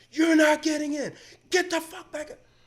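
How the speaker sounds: put-on very high, enraged, furious screaming. Retelling how the guy checking bags at the door yelled at a woman, reenact angry screaming. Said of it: "starts screaming at her at the top of his lungs".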